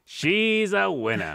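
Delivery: put-on forties voice. Showing how people talked about women back then, in 1940s-style voice. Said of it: "she's a winner in the 40s voice".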